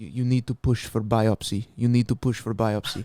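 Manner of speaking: put-on gnarly deep Russian accent. Retelling what a man told you about your swollen lymph node, in a deep Russian-like voice. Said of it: "gnarly, deep, like Russian voice".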